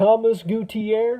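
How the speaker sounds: exaggerated Texas accent. Repeating a person's name to show how you'd say it, in a stereotypical Texas accent. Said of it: "with the stereotypical Texas accent".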